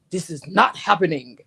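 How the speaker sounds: loud, mock deep-voiced angry voice. Retelling how they quit on someone: retelling own angry deep voice. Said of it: "the angry woman syndrome going".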